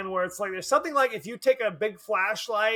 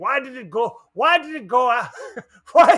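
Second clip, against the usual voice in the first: loud, horrible, fake Jamaican accent; 3 semitones higher, 7 dB louder than usual. Retelling people puzzling over a movie attack, in a horrible Jamaican accent. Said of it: "I'm trying to do a horrible Jamaican accent".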